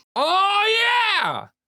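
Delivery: very high, long-pulled yell full of excitement. Proposing to race a mail carrier who listens: yelling. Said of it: "Why are you yelling?".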